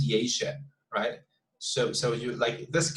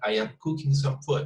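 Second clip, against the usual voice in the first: monotone, every word evened out, flat. Showing a sentence with perfect pronunciation but poor intonation: flat, even intonation. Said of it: "the intonation gets very flat. So we say something like that".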